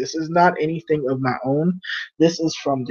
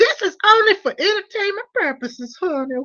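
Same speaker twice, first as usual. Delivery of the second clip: wacky, crazy, very high-pitched put-on voice. Speaker disguising their voice to stay out of trouble, crazy put-on voice. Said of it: "I want to talk in this crazy voice".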